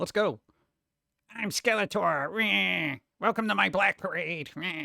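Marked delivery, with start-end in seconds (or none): 1.4-4.7 slow, whiny skeleton voice, words whined out slowly. Speaker pitches Skeletor fronting an emo band, whiny Skeletor voice. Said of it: "Whiny skeleton".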